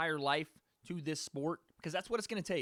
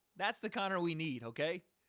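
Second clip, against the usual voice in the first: ordinary talk, nothing marked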